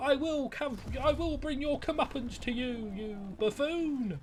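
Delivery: put-on seven-year-old child voice. Describing how a character sounds, imitating a seven-year-old. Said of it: "this like seven-year-old being like".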